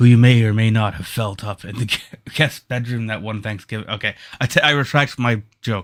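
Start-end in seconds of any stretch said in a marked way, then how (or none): none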